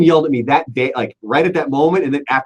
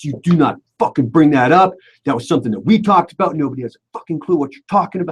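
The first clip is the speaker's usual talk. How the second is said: mock heated, sweary, pissed-off angry rant; 2 semitones higher than usual. Retelling what a co-host said on the talk back, imitating someone pissed off. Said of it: "he was pissed off, pissed off".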